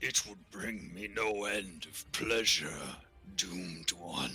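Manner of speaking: deep, rumbling, growling beast voice. Narrator voicing a creature that answers a request to bring back a javelin: deep rumbling voice. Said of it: "in a deep, rumbling voice".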